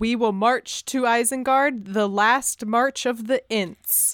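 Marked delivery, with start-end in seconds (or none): none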